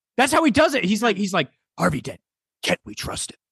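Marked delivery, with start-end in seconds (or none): 1.8-3.4 put-on hero whisper, quieter. Challenged during improv to do it, giving a Batman whisper. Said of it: "What Batman whisper?".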